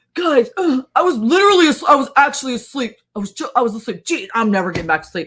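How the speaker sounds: stumbling, loud, high put-on cranky grumbling. Retelling how Eric woke up and complained, imitating Eric's mad grumbling. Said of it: "he like gets mad".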